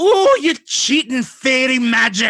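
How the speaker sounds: piercing, very high, very loud screech. Voicing a creature shrieking at a player who just vanished: shrieking. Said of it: "he shrieks at you".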